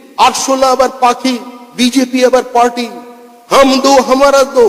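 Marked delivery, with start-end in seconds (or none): none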